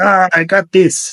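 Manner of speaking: put-on French accent. Imitating Antoine Dupont: imitating Antoine Dupont, terrible French accent. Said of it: "that was a terrible French accent".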